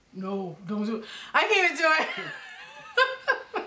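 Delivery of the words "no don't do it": put-on deep man's voice, dropped low. Speaker tries to imitate a man whose voice is deeper than theirs: imitating a deep voice. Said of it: "you hear how deep his voice is?".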